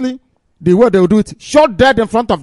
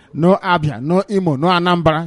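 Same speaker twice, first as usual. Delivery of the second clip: plain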